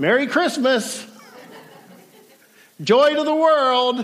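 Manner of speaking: high, sarcastic, forced cheer. Retelling what she said on the phone while waiting on her tire, imitating her sarcasm. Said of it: "she sarcastically says".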